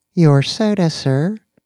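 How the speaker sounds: thin, synthetic, computerized robot voice. Reading a story aloud, a droid brings Danny his soda, thin computerized droid voice. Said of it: "said the droid's thin, computerized voice".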